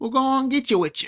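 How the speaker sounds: very high, put-on, strongly country-like accent. Quoting an old man speaking to his wife: imitating a country accent. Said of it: "in a very country-like accent".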